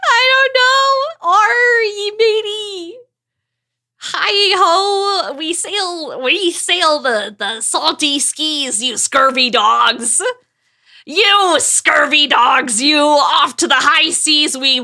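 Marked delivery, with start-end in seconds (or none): 1.3-14.8 put-on slow pirate voice, "ho" drawn out. Asked for their best pirate voice, the speaker does a pirate voice. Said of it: "Give us your best pirate voice".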